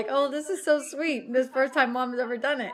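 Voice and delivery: ordinary talk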